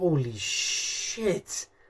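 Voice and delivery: awestruck, hushed, very soft, slow, breathy exclamation.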